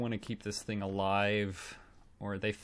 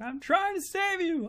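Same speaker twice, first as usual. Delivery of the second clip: mock, shrill, very high-pitched yelling; 3 dB louder than usual. Retelling a film scientist yelling at an alien: imitating someone yelling. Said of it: "yelling at the alien".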